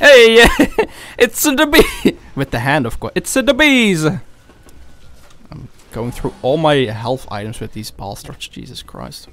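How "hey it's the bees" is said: put-on Italian New York accent. Bees keep coming at the speaker, who slips into an Italian New Yorker accent. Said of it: "I became an Italian New Yorker there".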